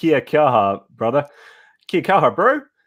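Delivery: put-on New Zealand accent. Thanking a viewer during a list of thanks: put-on New Zealand accent. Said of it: "That's my New Zealand accent".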